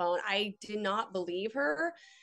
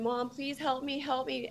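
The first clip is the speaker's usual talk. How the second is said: acted sobbing and pleading, higher, slower; 5 semitones higher than usual. Retelling a threatening call, the speaker voices the daughter in the background, imitating a crying, pleading daughter. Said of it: "And crying and pleading for me".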